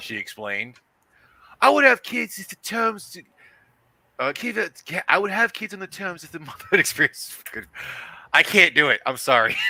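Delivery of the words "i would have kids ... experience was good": put-on very high-pitched, botched London accent. Reading aloud a London woman's quoted words: shitty English accent. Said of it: "do a, uh, a shitty English accent since she's supposed to be from London".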